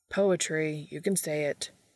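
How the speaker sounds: usual speaking voice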